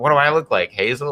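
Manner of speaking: put-on, light, joking, teasing tone. Retelling what mom always said about chores: imitating mom's joking tone. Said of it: "she always said it in a joking mode".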